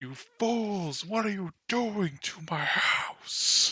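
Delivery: very high, stretched-out, drawn-out monster yell. Voicing a creature bursting from the forest at the players: yelling as a beholder. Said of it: "and you hear it yell".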